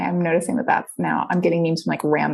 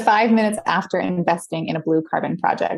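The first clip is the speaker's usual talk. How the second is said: normal talking voice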